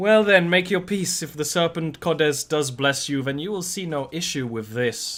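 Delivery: brushing-off, dismissive tone. Narrating a woman with a crystal ball answering a reaction, smiling. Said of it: "she's just kind of smiling".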